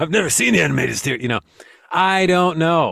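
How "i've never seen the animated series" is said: gravelly, rough, creaky put-on voice. Trying a third possible listener voice: third put-on listener voice. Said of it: "maybe you sound like this".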